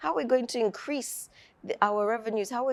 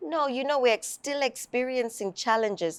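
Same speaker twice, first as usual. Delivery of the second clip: usual speaking voice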